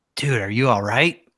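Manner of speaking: hushed whisper. Grabbing him before a match and checking on him, whispering in his ear. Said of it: "I'm whispering in his ear".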